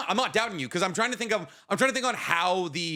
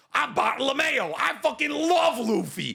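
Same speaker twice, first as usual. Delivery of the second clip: put-on full New Jersey accent, pitched up, slow; 7 semitones higher than usual. Describing the anime dub, the speaker imitates a character; Bartolomeo's New Jersey accent. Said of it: "he is deeply New Jersey".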